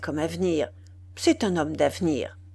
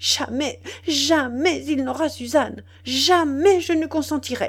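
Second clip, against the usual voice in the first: high, deeply shaken voice, overwhelmed by emotion; 8 semitones higher than usual. A woman repeats her refusal to Walter, shaken with terrible emotion. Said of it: "secouée d'une émotion terrible".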